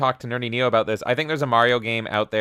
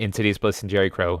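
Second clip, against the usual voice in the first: normal talking voice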